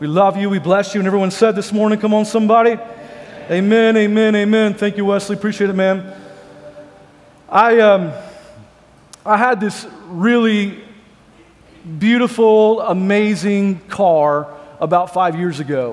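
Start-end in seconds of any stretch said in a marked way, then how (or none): 9.2-15.9 very slow, drawn-out, heavy sarcasm. Beginning a story about a car from five years ago: very sarcastic. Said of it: "I'm being very sarcastic when I say that".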